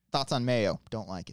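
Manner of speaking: normal talking voice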